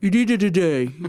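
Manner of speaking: yelling as if mouth is numb. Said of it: "he's yelling into the phone".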